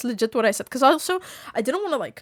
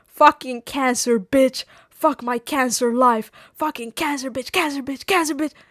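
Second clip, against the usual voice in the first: put-on yelling; 2 semitones higher than usual. Retelling how a man kept cursing in the speaker's face, retelling someone yelling. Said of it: "he just keeps yelling it in my face".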